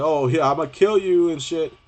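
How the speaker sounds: slow, drawn-out drawl dripping with sarcasm. Showing how the devil sounds when sarcastic: sarcastic devil voice. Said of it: "The devil sounds like".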